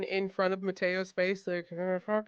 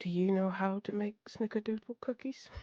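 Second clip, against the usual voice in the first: soft, quiet whisper; 4 dB quieter than usual. Playing a character who leans down to ask an elder: quiet whisper. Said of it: "he just kinda quietly whispers".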